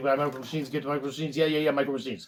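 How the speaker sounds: fast-talking commercial announcer voice. Recalling the Micro Machines commercials, imitating the Micro Machines guy. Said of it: "The guy would talk like this all the time".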